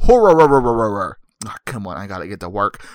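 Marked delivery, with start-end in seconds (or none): 0.0-1.2 horror sputtered loud, like a stalling engine. Joking about how he says a word, the speaker goes sputtering like a car not starting. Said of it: "it sounds like a car that can't start very well".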